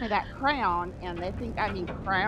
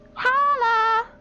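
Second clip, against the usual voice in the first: put-on Southern girl accent, very high, loud, shrill; 10 dB louder than usual. Guest greeting the stream host on joining, in a midwestern southern girl accent. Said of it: "I'd do my best Midwestern Southern girl accent".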